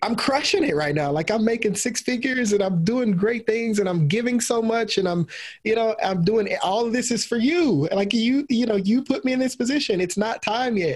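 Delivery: high, rising, pleading and protesting.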